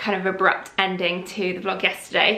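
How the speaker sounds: plain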